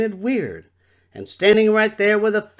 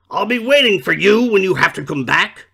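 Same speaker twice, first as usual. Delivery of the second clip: snarled, menacing voice with snorts; 4 dB louder than usual. A creature in the water below calls up to those escaping, snarling and snorting. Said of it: "he snarled and he snorted".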